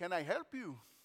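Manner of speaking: put-on Middle Eastern accent. Retelling what a man said to them, imitate his Middle Eastern accent. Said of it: "I'm going to do my best imitation".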